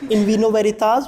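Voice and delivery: ordinary talk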